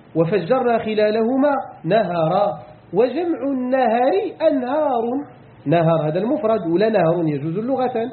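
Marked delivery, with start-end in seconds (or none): none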